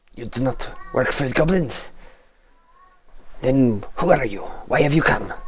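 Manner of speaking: clumsy, halting, pidgin-style broken speech. Narrator voicing a caged figure holding a stick, questioning the group, speaking broken Common. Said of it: "He's like speaking like a broken common".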